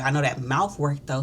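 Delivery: plain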